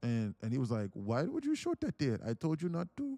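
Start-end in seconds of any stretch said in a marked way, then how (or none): 0.9-3.2 put-on, sing-song Indian accent. Retelling someone's reply to a YouTube commenter: Indian accent. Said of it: "in his Indian voice".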